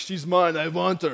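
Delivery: tough-guy action-movie star voice. Acting out a man claiming a woman as his: Arnold voice. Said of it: "Like the Arnold voice again".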